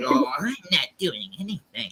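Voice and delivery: acted-out, talking-down, patronizing, condescending tone. Mocking how another speaker talks: imitating a condescending tone. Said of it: "he's got this condescending tone".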